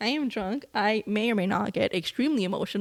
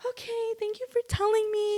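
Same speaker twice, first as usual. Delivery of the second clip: moved, very high, emotional voice; 13 semitones higher than usual. Retelling the sister thanking the speaker: imitating emotional sister. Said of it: "she's getting more emotional than I am".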